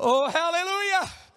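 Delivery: put-on, shouted preacher-style voice. Speaker imagines an absent man calling out from his corner, imitating Terry Williams shouting. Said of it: "and he'd be shouting out".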